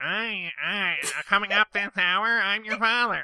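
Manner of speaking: nasal broadcaster voice. Joking about a radio drama casting: Ira Glass as Darth Vader. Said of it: "Ira Glass is Darth Vader. He's like".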